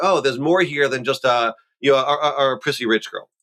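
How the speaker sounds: ordinary delivery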